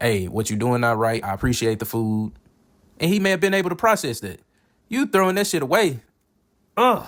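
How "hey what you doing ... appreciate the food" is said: plain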